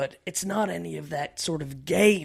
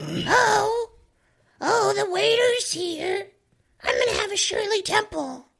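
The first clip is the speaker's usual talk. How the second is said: very high put-on lady's voice, drawn-out oh; 4 dB louder than usual. Role-playing a date as a 23-year-old from Tinder, best lady's voice. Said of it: "I'm going to do my best lady's voice".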